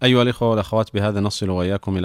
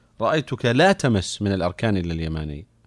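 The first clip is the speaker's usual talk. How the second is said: ordinary talk, nothing marked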